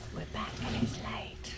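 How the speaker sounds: soft whisper.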